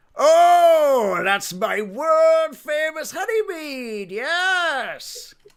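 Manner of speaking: very high, loud, slow goblin voice. Voicing a barkeep proudly naming his honeymead: goblin-like barkeep voice. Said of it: "a mix between a goblin and a".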